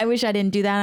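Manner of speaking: usual speaking voice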